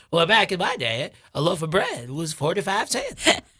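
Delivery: put-on elderly grandmother character voice. Playing a grandma being walked to bed, in an old grandma voice. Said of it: "what's your grandma voice?".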